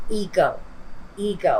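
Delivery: heavy stress on ego, twice. Describing an energy she senses, repeating the word and stressing ego. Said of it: "I stress the word ego here".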